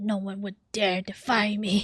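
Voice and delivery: loud, scratchy, scraping voice, laid on thick. Imitating a game character's line just heard: imitating a scratchy voice. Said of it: "why his voice so scratchy like that?".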